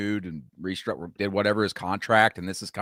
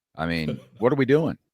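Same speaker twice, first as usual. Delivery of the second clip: plain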